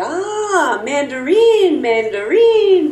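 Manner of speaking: female voice, high, slow, drawn-out realization.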